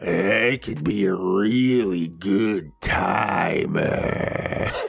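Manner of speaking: seductive voice, very low, slow and drawn out. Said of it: "she puts on her seductive voice".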